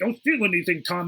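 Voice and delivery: normal talking voice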